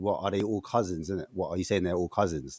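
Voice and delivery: low, soft, dry, mocking sarcasm.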